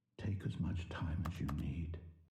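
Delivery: sounding creepy. Telling the player to take time deciding: sounding creepy. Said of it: "why are you sounding creepy".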